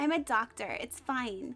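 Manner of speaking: put-on full Valley Girl accent. Playing a doctor in a hypothetical bit, in a full Valley Girl accent. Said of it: "go full Valley Girl and be like".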